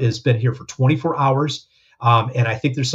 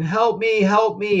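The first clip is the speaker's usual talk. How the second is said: high, very slow, drawn-out crying out; 8 semitones higher than usual. Retelling what a person on a gurney in the hallway said: imitating someone crying out. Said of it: "I heard him crying out".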